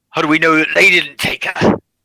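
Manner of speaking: loud, angry yell. Narrator voices one person shouting out from a crowd: angry shout. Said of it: "one angry voice that shouts out".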